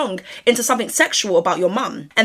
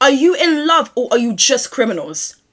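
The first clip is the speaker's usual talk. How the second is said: loud yelling shout; 4 dB louder than usual. Asking the guys whether they are in love or just criminals, shouting. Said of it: "I'm sorry that I'm shouting right now".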